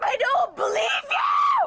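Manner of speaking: high, shouting yell, sharp retort tone. Refusing to believe what she is told during an arrest: yelling. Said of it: "Why are you yelling?".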